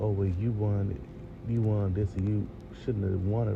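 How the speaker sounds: normal talking voice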